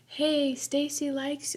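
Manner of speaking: barely-there, high, hushed, teasing half-whisper. Retelling telling a passing boy in the hall about a crush: imitating a very quiet voice. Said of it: "so quietly went".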